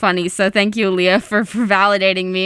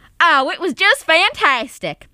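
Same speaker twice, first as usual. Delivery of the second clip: put-on rural country accent, pitched up; 5 semitones higher than usual. Voicing the second character in a short scene performed for listeners, in a country accent. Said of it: "I'm Karen".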